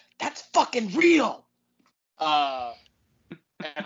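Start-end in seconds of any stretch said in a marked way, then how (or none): 0.2-1.5 sudden, loud, high blurted exclamation. Retelling grabbing a buddy's sleeve at the movies, re-enacting a loud exclamation. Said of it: "I loudly went".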